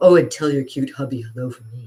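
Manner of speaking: low, loose voice. Retelling a voice overheard in a casting office: imitating Dottie's low loose voice. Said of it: "that low, loose voice saying".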